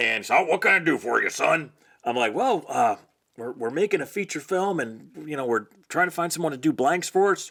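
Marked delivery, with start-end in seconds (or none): 0.4-1.7 put-on rough, gruff old-timer cowboy voice. Recounting phoning a man about blanks for a film, in Baron Winchester's gruff cowboy voice. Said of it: "Had a gruff old kind of cowboy voice".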